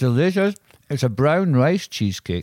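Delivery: talking with mouth full. Eating a rice cake while another speaker narrates, talking with mouth full. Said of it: "There goes the last mouthful of the rice cake".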